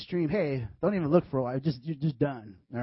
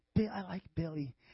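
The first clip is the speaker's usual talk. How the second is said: soft, hushed, under-the-breath stage whisper; 8 dB quieter than usual. Acting out a girl telling a petal her crush: imitating a girl half-whispering. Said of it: "I'm just gonna whisper it a little bit".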